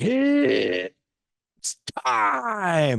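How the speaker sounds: very high, loud, swooping top-of-the-lungs scream. Retelling how he opens the summit on the mic: imitating his own yell. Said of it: "and I'll yell it, like, scream it".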